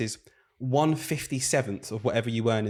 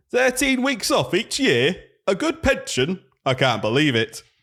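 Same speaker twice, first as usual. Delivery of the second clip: put-on northern voice, much higher, louder, slower; 8 semitones higher, 5 dB louder than usual. Starting a rant, the speaker voices someone from up north. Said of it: "Someone up north".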